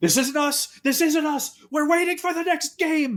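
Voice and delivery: very high-pitched, frantic, panicked pleading. Retelling what a group said at a baseball field, acting out their panic. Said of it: "And they start just panicking".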